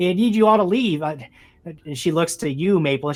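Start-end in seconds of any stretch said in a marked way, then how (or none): 0.0-1.0 increasingly upset woman's voice, higher and louder. Voicing a woman who finds strangers at her door: agitated woman's voice. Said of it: "getting more and more agitated".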